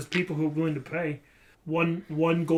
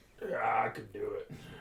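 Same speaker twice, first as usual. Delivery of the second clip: put-on low, soft, gruff older man voice; 6 semitones lower, 8 dB quieter than usual. Voicing the specialist who has just been brought in: gruff older man voice. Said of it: "this like gruff older man come in".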